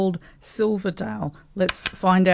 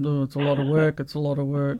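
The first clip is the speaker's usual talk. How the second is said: mock muttering under breath, lower pitch; 5 semitones lower, 3 dB quieter than usual. Retelling what a dragged-along husband says in a garden: imitating a husband muttering under his breath. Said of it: "I can hear him saying under his breath".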